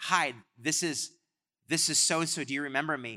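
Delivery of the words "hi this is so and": usual speaking voice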